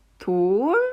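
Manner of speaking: 돌 with rising tone, starting low and ending high. Demonstrating the rising tone on the word, pitch starts low and climbs: low start, rising pitch at the end. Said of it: "처음은 낮으나 끝이 들려서 높은 소리예요".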